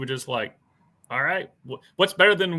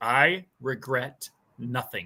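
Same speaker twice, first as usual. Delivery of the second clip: audiobook narrator's reading voice; 3 semitones lower, 4 dB quieter than usual. Retelling how the audiobook narrator read a line: imitating the narrator's exact tone. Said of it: "he said it in that exact tone".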